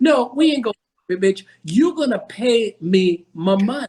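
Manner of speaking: angry, sharp scolding tone. Retelling own reply when told they could keep it: retelling going off on someone. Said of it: "Doctor M can go straight bug".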